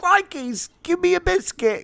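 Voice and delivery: put-on highbrow British-accented dog voice. Pretending to be Damien's dog asking for a biscuit: put-on highbrow British accent. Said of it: "some highbrow British accent with you".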